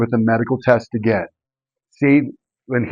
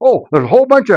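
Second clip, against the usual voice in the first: put-on very high, loud store-clerk voice; 10 semitones higher, 4 dB louder than usual. Telling of a GNC visit, the speaker quotes a clerk answering a customer; imitating a clerk saying it loud. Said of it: "they say it really loud just to embarrass you".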